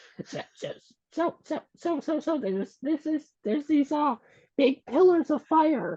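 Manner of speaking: squeaky, very high cat voice. Asked to say it as the cat, the speaker puts on a cat voice. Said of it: "Gotta get my best cat voice on".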